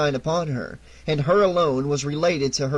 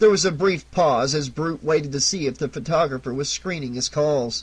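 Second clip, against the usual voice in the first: plain reading voice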